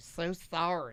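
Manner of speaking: put-on soft, sassy voice with a Southern accent. Joking about making apologies later: Leslie Jordan voice. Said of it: "That's my Leslie Jordan voice".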